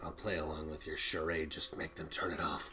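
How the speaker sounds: low, hushed words forced through gritted teeth. Game master voicing a character answering the party's persuasion, through gritted teeth. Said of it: "Through what sounds like gritted teeth".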